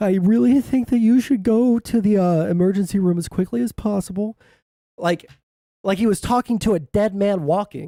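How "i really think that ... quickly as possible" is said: put-on quivering, trembling voice. Retelling what the nurse helpline man said, imitating a quivering voice. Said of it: "his voice started quivering".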